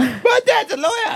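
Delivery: put-on very high, drawn-out defensive outburst. Teasing the other speaker by retelling their line: imitating a defensive blurt. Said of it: "you just blurted out the whole".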